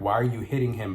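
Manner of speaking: ordinary talk, nothing marked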